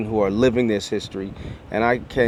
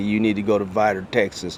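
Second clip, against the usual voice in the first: put-on quick Texas-accented voice. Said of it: "I don't know why God has a Texas accent".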